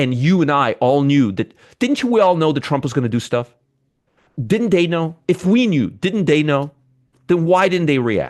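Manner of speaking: heated, worked-up, insistent delivery. A presenter addresses viewers, getting worked up. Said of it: "I'm getting worked up".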